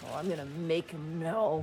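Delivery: muttered, hushed, low growl under the breath. A character reacts after being told not to worry, growling under her breath. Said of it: "She just kinda growls under her breath".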